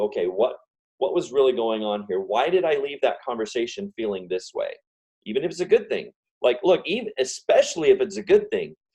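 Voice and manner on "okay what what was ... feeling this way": plain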